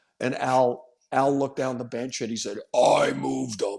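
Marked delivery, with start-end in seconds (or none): 2.8-3.8 sharp, rough, cutting voice. A player recalls being benched mid-game, imitating Al's ham-cutting voice. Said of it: "in that voice that I'm telling you could cut a ham in half".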